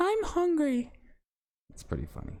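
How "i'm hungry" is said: put-on very high-pitched, girly female voice. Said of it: "we'll both do the voice".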